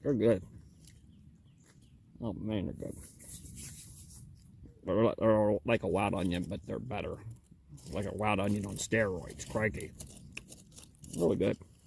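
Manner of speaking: talking through a mouthful, chewing. Tasting a ramp just pulled from the ground, eating while talking. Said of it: "I'm just sitting here eating 'em".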